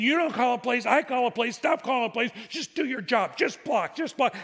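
mock exasperated, angry yelling tirade. Retelling a mic'd-up clip of a player screaming at his center: imitating Peyton Manning yelling. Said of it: "he's yelling at him".

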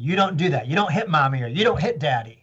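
put-on stern, reproachful voice. Describing a young child scolded for hitting a parent: imitating a parent scolding. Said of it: "the kid gets scolded".

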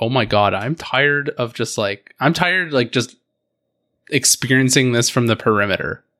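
ordinary delivery

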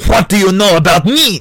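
put-on French accent, high and loud. Retelling Bourdain's clash, voice the French restaurant owner in a French accent. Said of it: "the owner said in a French accent".

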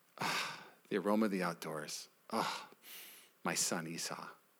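hushed, savoring, very soft and low.

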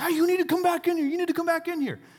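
loud yelling. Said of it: "yelling at me and waving her".

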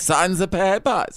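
put-on German accent. Speaker explains they may do the accent because they're german: german accent. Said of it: "I'm allowed to do that accent".

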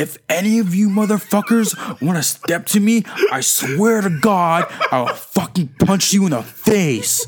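very slow, high-pitched, menacing and aggressive. Retelling what a guy told the class once the teacher left: imitating an aggressive threat. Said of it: "Why is he so aggressive?".

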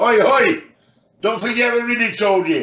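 put-on high shouted holler. Retelling a half-time team talk, imitating a shout. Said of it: "And Jimmy shouts".

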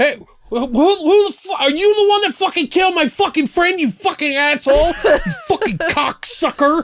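very high, shrill, enraged scream. Imitating a dying man yelling at the BBK, imitating an angry yell. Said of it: "you did a good impression right there".

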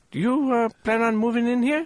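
put-on Indian accent. Retelling what a man said to him, in a put-on indian voice. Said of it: "I'm about to do this in the Indian voice".

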